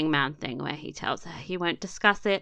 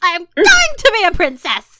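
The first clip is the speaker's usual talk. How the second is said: very high, loud, angry tantrum shriek; 12 semitones higher, 13 dB louder than usual. Recapping a scene where she stomps angrily, imitating an angry scream. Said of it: "an angry stumpy thing where she screams".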